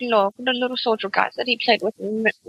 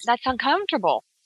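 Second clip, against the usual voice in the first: plain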